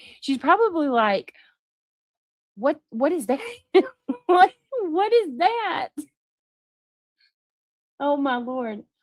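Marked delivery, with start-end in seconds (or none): 2.5-5.9 put-on high, startled, shocked little baby voice. Imagining a baby hearing a voice: imitating a shocked baby. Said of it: "She's probably shocked at the tone".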